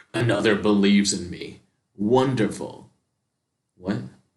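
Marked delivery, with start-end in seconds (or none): 0.2-2.9 slow, growling monster voice. Reading a game's story aloud, voicing the son's line as a growl. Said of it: "as he growls".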